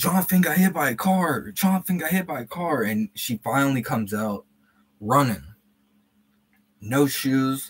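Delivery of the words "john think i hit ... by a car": acted, delirious, high screaming through tears. Acting out what they screamed to john back then, retelling a scream. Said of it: "I start screaming that".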